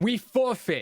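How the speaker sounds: very high, loud, bold, full-chested voice. Repeating a declaration of forfeit in character: said boldly with full chest. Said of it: "I say it again with my whole chest".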